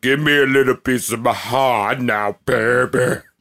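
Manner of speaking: very deep, low-pitched voice. Saying the line again as they wanted to hear it, really deep voice. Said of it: "I kind of want to hear that in a really deep voice".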